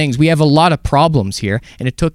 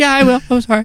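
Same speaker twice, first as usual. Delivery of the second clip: put-on, very high, frightened, small, sorry-sounding voice; 10 semitones higher than usual. Retelling a tenant's reply to a strict condo board mother: imitating a scared tenant. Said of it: "and she's scared".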